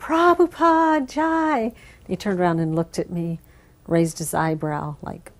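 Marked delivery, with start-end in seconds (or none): 0.0-1.7 mock very high, cheerleader-style cheering yell. Retelling a greeting call in the temple room: imitating own past yell. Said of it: "I was yelling".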